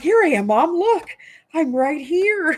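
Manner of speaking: silly little dog voice, very high, slow. Retelling how the dog came running over, voicing the dog. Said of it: "She's like".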